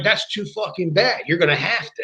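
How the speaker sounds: put-on irritated, mildly angry tone. Retelling being yelled at after waking someone at 3:30 a.m.: imitating George Scott yelling. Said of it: "I never got yelled at like that".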